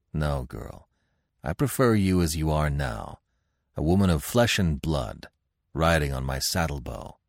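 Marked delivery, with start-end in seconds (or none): none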